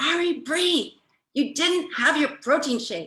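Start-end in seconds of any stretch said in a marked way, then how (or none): 0.0-2.3 put-on, high-pitched screamed scolding tone. Retelling screaming at Ari Bree, retelling a scream. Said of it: "So I screamed at her".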